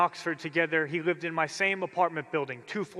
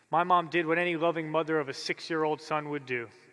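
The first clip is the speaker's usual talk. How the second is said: plain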